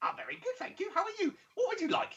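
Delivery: very high, sing-song, swooping gnome voice. Voicing a gnomish man greeting the players: gnomish merchant voice. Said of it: "a gnomish man".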